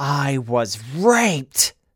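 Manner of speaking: loud scream. Retelling what a Republican at a gathering screamed, retelling a scream.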